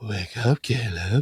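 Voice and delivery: play-acted sultry, seductive, come-hither delivery. Retelling how a character wakes caleb: imitating a seductive voice. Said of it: "She says it, like, way more, like, seductive".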